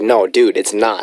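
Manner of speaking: ordinary delivery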